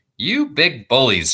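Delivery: tiny, high, squeaky mouse voice. Narrator reads a mouse calling out to the nurses, squeaky mouse voice. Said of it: "squeaked the mouse".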